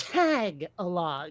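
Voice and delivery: Tagalog with stress on first syllable "Tag". Speaker's natural habit of first-syllable emphasis: stress on first syllable 'Tag'. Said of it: "my natural inclination is to put the emphasis on the first syllable".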